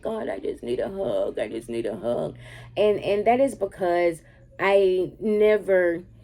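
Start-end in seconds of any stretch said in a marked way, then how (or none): 0.0-2.4 very low, soft, tearful crying murmur. Recalling crying while praying a few months ago, reenacting own crying. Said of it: "I'm crying like".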